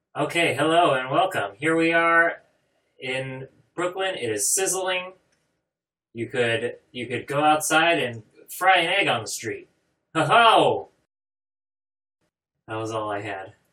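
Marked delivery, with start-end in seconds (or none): 0.6-10.9 forced hyped-up enthusiasm, loud, pitched up. Stepping out of the previous voice to restart with pumped-up energy. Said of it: "step out of this voice and try to pump it up".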